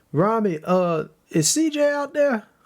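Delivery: high, drawn-out shouting. Calling to rami down a hallway in character: shouting down a hallway. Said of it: "shouting down the hall".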